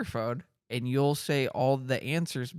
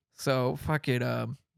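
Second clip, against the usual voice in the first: usual speaking voice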